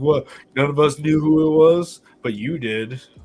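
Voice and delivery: mock sly, knowing, pointed, insinuating tone. Teasing the other speaker by imitating him insinuating: imitating B Jones insinuating. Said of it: "You're like".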